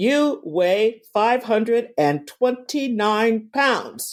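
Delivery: automated, robotic machine announcement voice. Speaker describes a device reading their weight out loud; robotic computer voice. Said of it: "in this computer voice".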